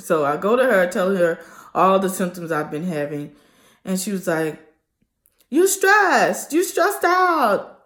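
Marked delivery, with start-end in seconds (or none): 5.5-7.6 very high put-on woman's voice. Telling a story about a visit, quoting the woman in her voice. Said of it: "I have to t- talk in her voice when I tell the story".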